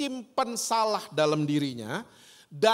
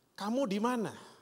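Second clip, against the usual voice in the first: soft, mild, gentle, kindly, without anger; 6 dB quieter than usual. Quoting God's question to Adam, gentle, not angry. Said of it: "Ternyata intonasinya tidak marah sama sekali".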